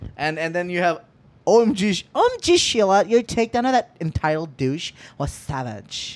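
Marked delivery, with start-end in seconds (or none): 2.1-6.2 put-on, swooping, sing-song LA woman voice. Reading a slang definition's example sentence aloud: LA woman voice. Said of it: "L A woman".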